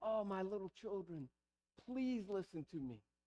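soft, gentle, tender pleading. Reading a writer's plea to his little children with inflection: acted pleading, begging tone. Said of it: "it would be this place of begging".

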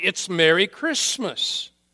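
loud, angry, insistent shout. Retelling an argument at a restaurant counter: imitating a man shouting. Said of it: "he's shouting".

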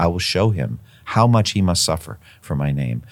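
ordinary talk

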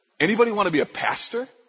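acted sarcastic tone. Quoting a man who leaned in and asked this, retelling a sarcastic question. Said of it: "with a really sarcastic tone".

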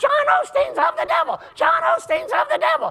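put-on woman screaming, shrill, very high. Retelling a woman in the church crowd shouting out, imitating a woman screaming. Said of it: "She's still screaming".

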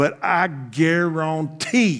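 slight Cajun accent. Telling a Bible story, the speaker briefly slips into a slight Cajun accent. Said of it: "I went a little Cajun there for just a second".

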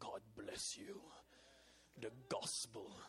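slow, breathy put-on German accent. Quoting a man's blessing the way he says it, imitated German accent. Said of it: "in his German accent".

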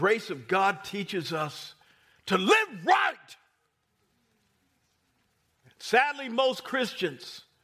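deliberate, loud, drawn-out, carried-away preaching delivery. Speaking to listeners about the grace of God, the speaker gets loud. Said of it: "I'm sorry for getting loud".

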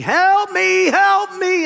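rough, shrill, very loud, high, drawn-out screaming. Telling a story about a man hanging from a cliff, retelling his yell for help. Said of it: "he's yelling and screaming".

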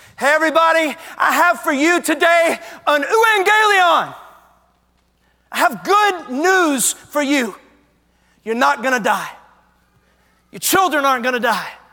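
put-on shout at top of lungs. Retelling a battle messenger's news to a city: messenger shouting at the top of his lungs. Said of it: "the messenger shouts at the top of his lungs".

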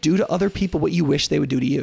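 ordinary talk

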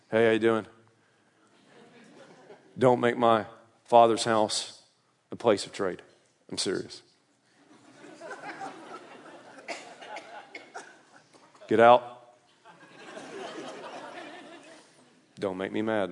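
very low, unbothered, easygoing, swooping laid-back voice. Describing a peace-and-love hippie figure walking around talking: flat monotone voice. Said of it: "speaking in a monotone voice".

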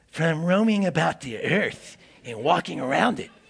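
sinister, evil put-on voice. Reading Satan's reply to the Lord from a Bible passage: evil Satan voice. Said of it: "Satan has to be given an evil voice".

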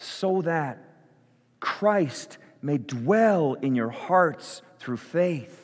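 slow, deliberate, prayer-like reading. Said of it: "I'm gonna say it slowly".

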